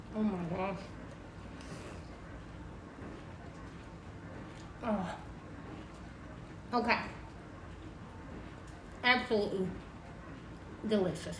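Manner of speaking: talking with mouth full. Tasting a hot pretzel bite just made, talking with mouth full. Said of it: "I'm talking with my mouth full".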